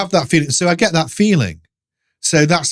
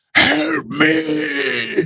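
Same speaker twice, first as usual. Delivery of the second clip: imitated raspy voice, pitched higher; 11 semitones higher, 3 dB quieter than usual. Retelling a strange voice heard at night: imitating a rasping voice. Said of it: "like rasping voice".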